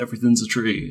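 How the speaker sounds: ordinary talk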